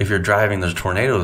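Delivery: ordinary delivery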